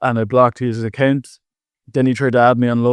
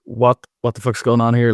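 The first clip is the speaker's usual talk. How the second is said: put-on panicked voice. Retelling picking up the scammer's call: imitating own panicked voice.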